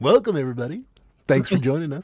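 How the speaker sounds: on-air radio show host announcer voice. Welcoming everybody like a radio show guy, radio show host voice. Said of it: "now I got to do like a radio show guy".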